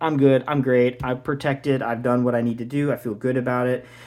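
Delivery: ordinary talk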